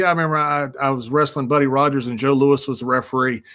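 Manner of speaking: ordinary talk, nothing marked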